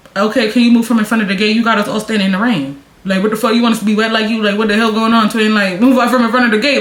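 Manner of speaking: ordinary delivery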